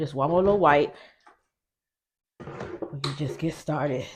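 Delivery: breathing hard, out of breath. Starting the video right after running down the steps, breathing hard. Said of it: "Sorry if I'm breathing hard".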